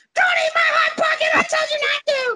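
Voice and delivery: very high, shrieked screaming. Retelling how she came running back into the kitchen, retelling her screaming.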